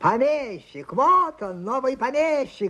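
high, mocking, jeering shout. The other heirs greet a man amid mocking congratulations, shouted. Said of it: "кричали прочие наследники".

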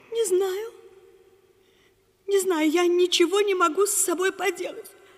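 crying, in tears. In a scene, a character asked why they are crying answers, crying. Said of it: "Плачу".

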